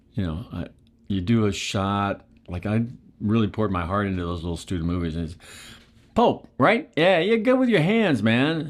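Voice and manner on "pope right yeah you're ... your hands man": put-on strong Brooklyn accent, higher pitched. Quoting a former teacher praising student films: strong brooklyn accent. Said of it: "a strong Brooklyn accent".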